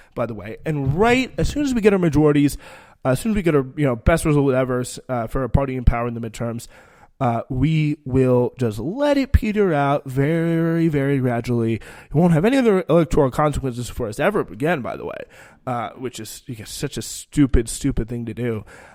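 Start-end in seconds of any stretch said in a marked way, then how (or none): none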